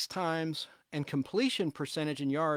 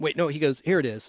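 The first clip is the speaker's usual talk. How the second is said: ordinary delivery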